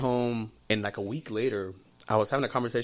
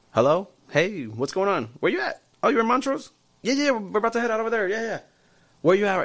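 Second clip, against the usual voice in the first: very high, loud, fake put-on chatter; 10 semitones higher, 6 dB louder than usual. Retelling pretending to be on a phone call while being overheard: retelling a fake phone call. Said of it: "I pretend to be on a phone call".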